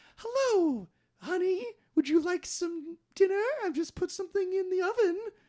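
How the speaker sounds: put-on very high, old-timey sitcom housewife voice. Retelling a movie scene of a wife greeting her husband: old-timey sitcom housewife voice. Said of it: "dressed up like some kind of housewife from, like, an old-timey sitcom".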